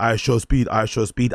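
plain

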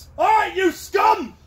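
booming, very loud, high-pitched shout. Showing the call-and-response rally cry, yelling as loud as possible. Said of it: "And it looks something like this".

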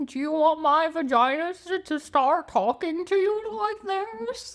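put-on gummy old-man voice. Speaker teasing the other person in a toothless old man voice. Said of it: "like a geriatric old man that's missing his teeth".

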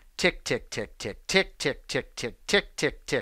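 hushed, whispered sports announcer-style voice. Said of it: "I suddenly sound like a famous sports announcer".

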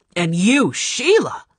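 speaking angrily. A man turns on a woman and questions her, angry. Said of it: "he said angrily".

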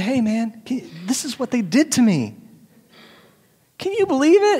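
play-acted, swooping, whiny fussy baby voice. Acting out someone gossiping to a neighbor: whining like a baby. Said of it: "it's like a whining baby".

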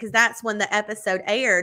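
normal talking voice

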